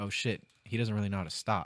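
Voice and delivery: ordinary talk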